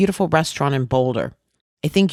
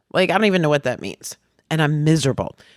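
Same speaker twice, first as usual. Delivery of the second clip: ordinary talk, nothing marked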